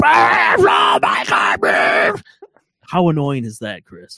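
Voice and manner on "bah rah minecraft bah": loud, very slow, drawn-out scream. Imitating a YouTuber screaming into his microphone: imitating Preston Plays screaming. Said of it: "screams into his microphone".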